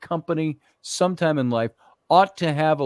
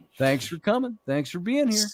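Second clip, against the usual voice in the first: cheerful, bright, pitched-up customer-service clerk voice; 6 semitones higher, 3 dB quieter than usual. Retelling how he greeted store customers: imitating his cheerful clerk voice. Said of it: "That kind of voice".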